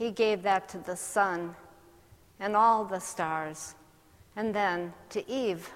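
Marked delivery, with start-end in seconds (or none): none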